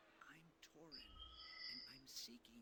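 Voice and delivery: soft, hushed whisper under the breath. Introducing himself to someone who is recording, whispering. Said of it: "No use to whisper now".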